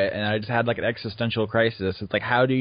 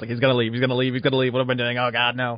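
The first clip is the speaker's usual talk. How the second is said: mock very fast, rushed talking. Acting out own thoughts when a guest is about to leave: talking really fast. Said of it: "I just find myself talking really fast".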